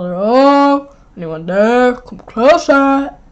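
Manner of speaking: put-on deep, low-pitched mouse voice. Voicing a mouse character, speaker calls out in deep mouse voice. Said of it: "my mouse voice is so deep".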